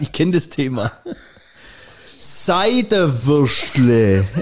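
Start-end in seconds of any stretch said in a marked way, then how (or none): 2.2-4.3 loud, deliberately slowed, drawn-out word. Acting out a Swabian repeating a dialect word to be understood: slow and loud. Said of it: "es wird nicht besser, wenn du es laut und langsam sagst".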